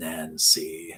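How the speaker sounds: throaty, disturbing villain voice. Quoting a villain calling a character's name: gravelly throaty Freddy Krueger voice. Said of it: "in his kind of gravelly, throaty, um, disturbing voice, like Freddy Krueger".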